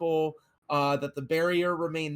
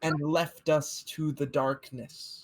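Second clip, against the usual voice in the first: preaching, sermon-style voice. A priest addresses a gathered crowd during a service: preaching priest. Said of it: "Uh, this priest, this pastor, uh, this whatever he is, has been kind of talking about. / Uh, this priest, this pastor, uh, this whatever he is, has been kind of talking about. Uh, they were praying fo".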